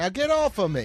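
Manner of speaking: put-on New York accent, laid on thick. Reading a character's line aloud, New York accent. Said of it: "he does have a New Yorker vibe to him".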